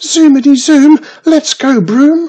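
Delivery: very loud, shrill, high-pitched squeal. Narrator reads Wiz's line as she climbs onto Broomstick to leave: squealing.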